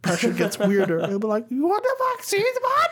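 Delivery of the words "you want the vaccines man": put-on falsetto, much higher pitch. Describing Tim Dillon going higher under pressure, doing him in full falsetto. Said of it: "full falsetto".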